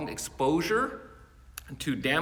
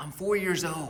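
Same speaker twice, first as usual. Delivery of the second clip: imitated, put-on child's whisper; 3 semitones higher than usual. Retelling a phone call where a young voice whispers: imitating a child's whisper. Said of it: "and Jimmy whispers".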